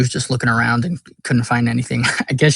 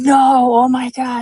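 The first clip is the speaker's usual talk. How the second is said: very high, very slow, drawn-out panicked freak-out; 12 semitones higher, 4 dB louder than usual. Retelling how he reacted when told the plan; retelling him freaking out. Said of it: "So he's he's freaking out".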